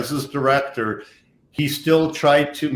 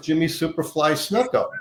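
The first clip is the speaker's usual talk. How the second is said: normal talking voice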